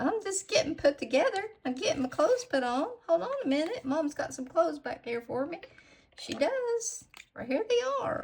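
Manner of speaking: put-on adorable, cute baby penguin character voice. Voicing a freshly painted nail-art penguin getting dressed: voicing an adorable little penguin. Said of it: "adorable little penguin just standing there like".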